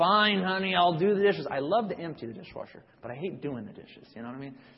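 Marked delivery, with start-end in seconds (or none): 0.0-1.5 loud, grudging, grumpy grumbling complaint. Describing reluctantly agreeing to do the dishes at home, mock-grumpy grumbling. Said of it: "do it grumbling and grumpy and say".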